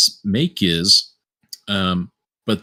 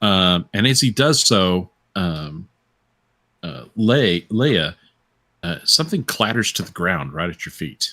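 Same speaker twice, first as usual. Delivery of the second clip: normal talking voice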